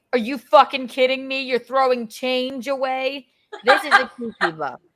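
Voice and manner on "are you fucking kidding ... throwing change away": mock scolding dad voice, mild half-yell. Retelling the time the dad yelled at Rocco for throwing change away: imitating Tom Thompson yelling. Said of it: "But he yelled at Rocco".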